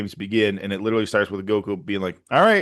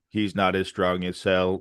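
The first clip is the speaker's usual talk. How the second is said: put-on flat monotone, lower and quieter; 4 semitones lower, 5 dB quieter than usual. Retelling a character's line from the show: imitating monotone voice acting. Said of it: "monotone act-, like, voice acting".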